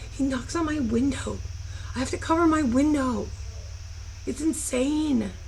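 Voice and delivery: high, hushed whisper. Speaker fears her stalker is back and whispers so he won't hear; whispering. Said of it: "I'm whispering so he doesn't hear me".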